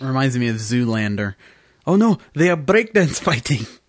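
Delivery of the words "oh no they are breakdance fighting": put-on Russian accent, higher pitch. Podcast host riffing after mentioning Zoolander, in a Russian voice. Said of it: "You decided to go with a Russian voice".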